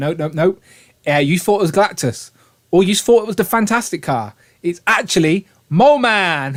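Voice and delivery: ordinary talk, nothing marked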